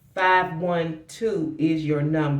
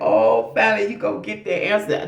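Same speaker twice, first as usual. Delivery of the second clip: acted excited relief, higher and louder; 5 semitones higher, 5 dB louder than usual. Giving a reading, acting out the mom who is coming: imitating an excited mom. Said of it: "She's excited".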